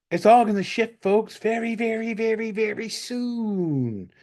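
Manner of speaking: sarcastic, mocking delivery. Speaker addressing the listeners as folks; sarcastic, mocking tone. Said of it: "there's a little bit of sarcasm and mocking in my voice".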